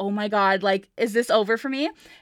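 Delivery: mock panicked, freaking-out voice. Retelling how Annie reacted when pulled aside: imitating Annie freaking out. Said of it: "Annie's, like, freaking out".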